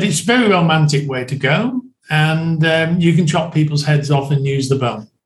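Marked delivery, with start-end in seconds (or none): none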